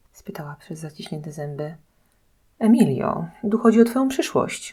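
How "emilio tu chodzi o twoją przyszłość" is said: offended, bristling, indignant, raised and high-pitched. Diana replies to Emilia, indignant. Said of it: "obruszyła się".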